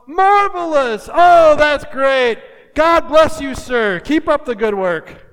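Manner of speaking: high, loud, slow, enthusiastic gushing.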